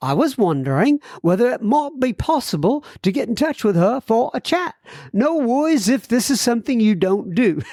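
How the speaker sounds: bad put-on British accent. Reading a listener's message to the podcast aloud, in a bad british accent. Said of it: "maybe I should read this in a British accent now".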